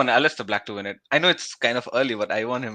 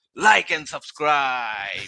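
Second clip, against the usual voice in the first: put-on pro wrestling call-out delivery. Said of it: "You mixed D X's call out".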